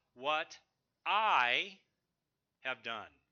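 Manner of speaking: strong stress on the word I.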